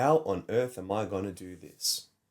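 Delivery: plain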